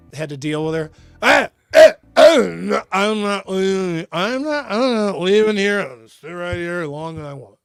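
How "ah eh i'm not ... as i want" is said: put-on tipsy, drunken woman's voice. Acting out a woman who wouldn't leave the satellite truck, imitating a drunk woman. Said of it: "the drunk woman would be like".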